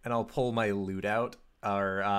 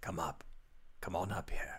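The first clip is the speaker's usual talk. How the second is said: rushed, quick, hushed whisper; 2 semitones lower, 9 dB quieter than usual. Calling a companion up onto a roof, whispering. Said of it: "I'm going to whisper down to".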